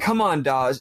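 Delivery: acted-out, mock-angry frustrated outburst. Recounting a scene, acting out a character who cannot open a coffer: acting out angry frustration. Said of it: "Sonic gets really angry".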